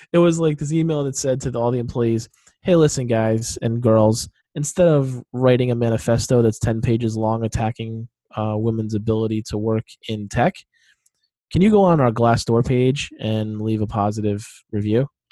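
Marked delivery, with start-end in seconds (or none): none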